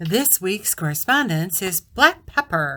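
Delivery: put-on sleazy, suggestive, smutty secretary voice. Asked to present the correspondence of the week, smutty secretary voice. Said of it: "that smutty secretary voice".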